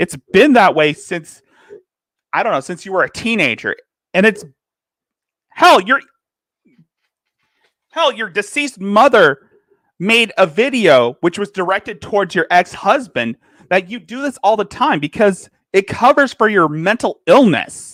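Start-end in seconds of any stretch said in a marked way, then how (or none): 4.1-17.9 voice raised in a pressing rant. Addressing Shani directly while apologizing to the audience, raised voice. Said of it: "I'm sorry if I'm raising my voice".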